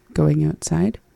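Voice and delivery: plain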